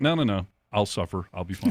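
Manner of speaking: normal talking voice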